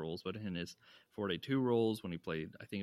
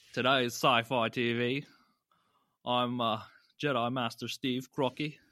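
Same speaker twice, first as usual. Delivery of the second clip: bad fake Australian accent, louder; 3 semitones higher, 8 dB louder than usual. Podcast host introducing the sci-fi TV podcast, in a terrible Australian accent. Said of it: "That's a terrible Australian accent".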